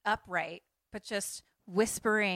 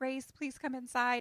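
put-on tearful pleading, crying voice, pitched higher; 5 semitones higher, 3 dB quieter than usual. Retelling a film scene of a girl pleading, imitating someone crying. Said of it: "crying, and she's like".

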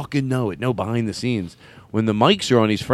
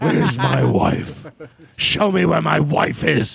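hoarse, rough, creaky, insistent, pressing voice; 4 semitones higher than usual. Doing a Harrison Ford impression the group was asked for: Harrison Ford impression. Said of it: "Harrison Ford".

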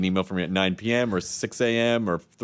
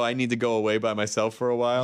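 ordinary talk

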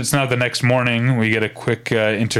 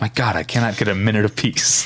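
mock muttering under her breath. Retelling a scene, quoting one character's reply to a request for help, acting out muttering under breath. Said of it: "mutters under her breath".

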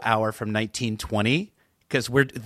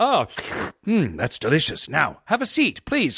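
put-on old-time radio play delivery, higher pitched; 4 semitones higher than usual. Showing how an old-fashioned scripted radio show sounds: old-fashioned radio drama acting. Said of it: "that's as old-fashioned as it gets".

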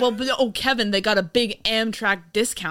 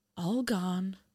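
put-on chilling old-woman voice, much quieter; 9 dB quieter than usual. Recapping a movie, speaker quotes an old woman in a very chilling voice. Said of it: "says in a very chilling voice".

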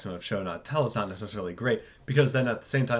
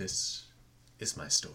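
slow, breathy, drawn-out, deliberate whisper; 5 semitones lower, 9 dB quieter than usual. Showing how the opening line should sound: slow Tidus voice. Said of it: "You gotta say it slow".

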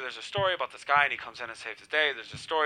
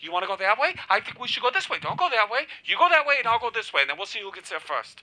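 put-on, big, high-pitched, movie-style shouted yelling; 8 semitones higher, 4 dB louder than usual. Retelling how every movie goes, imitating own yelling about which way to go. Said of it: "Every movie I yell".

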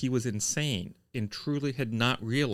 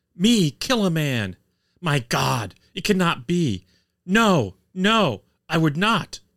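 very loud, high bellowed cry of holy terror; 6 semitones higher, 8 dB louder than usual. Reading a reporter's account, the accused man denies the killing: loud exclamation in holy terror. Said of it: "He exclaimed in a loud voice".

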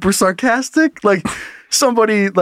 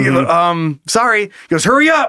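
ordinary delivery

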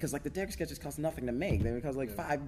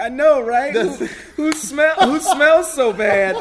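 put-on crying, higher and louder; 13 semitones higher, 15 dB louder than usual. Retelling how a guy answered people asking about a smell, imitating someone crying. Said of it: "he was like crying like".

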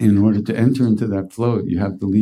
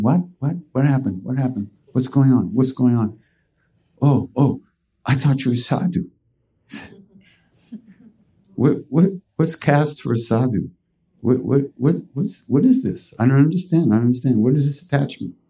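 put-on confused voice, higher and slower; 4 semitones higher than usual. Retelling a story, the speaker acts out Maharaji's reaction: imitating Maharaji, confused. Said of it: "And Maharaji's going".

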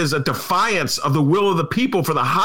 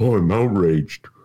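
put-on glum, mopey, gloomy moan, pitched low; 10 semitones lower than usual. Mocking people who now claim outrage, in a mock-gloomy Eeyore voice. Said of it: "sound like Eeyore from Winnie the Pooh".

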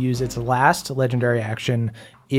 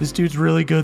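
usual speaking voice

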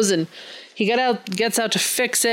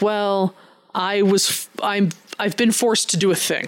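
normal talking voice

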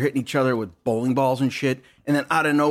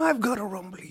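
soft, high, childlike cartoon bear voice; 8 semitones higher, 6 dB quieter than usual. Ranting about Winnie the Pooh, speaker quotes him in a Winnie the Pooh voice. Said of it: "talk like a grown-up motherfucker".

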